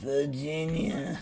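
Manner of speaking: stupid, daft voice, kept soft. Speaker, moving units on a map, calls out a place name in stupid John Carter voice. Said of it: "It's just that stupid voice".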